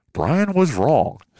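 documentary narrator voice. Cutting in on their own past hype about a player, narrator voice. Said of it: "Narrator's voice".

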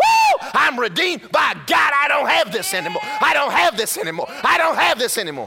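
put-on ecstatic joyful shouting. Retelling how a woman rejoiced upstairs after being healed, imitating ecstatic shouting. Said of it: "She's dancing up there in that room".

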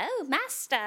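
creepy, eerie, high-pitched voice. Describing the Undertaker's voices to another speaker: imitating the Undertaker's creepy voice. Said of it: "that really creepy voice".

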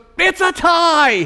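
put-on very high, bursting little-boy excitement, "tie" drawn out. Retelling a three-year-old son blurting out the gift: imitating an excited child. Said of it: "he was so excited".

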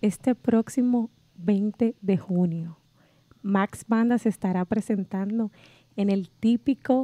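seductive put-on voice. Asking a co-speaker a question in a put-on sexy voice. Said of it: "pero pero en una voz Chobi, sexual".

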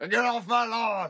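put-on cranky old man's yell, very high, shrill and loud. Acting out yelling at the neighbor's dog on his lawn, mock grumpy yell. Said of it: "I would yell at the dog".

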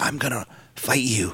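very hushed, raspy whisper. Describing a wrestler's way of talking: imitating Rey Mysterio's raspy whisper. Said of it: "whispers when he talks".

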